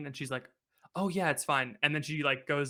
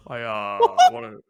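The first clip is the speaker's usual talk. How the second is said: very loud, booming, halting podium voice; 3 semitones lower, 13 dB louder than usual. Answering a challenge to do an impression: Barack Obama voice. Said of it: "That's my Barack Obama impression".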